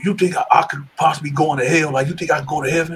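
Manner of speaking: whispered speech. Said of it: "He was whispering".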